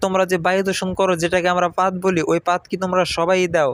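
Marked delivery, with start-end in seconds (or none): none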